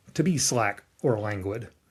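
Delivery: ordinary delivery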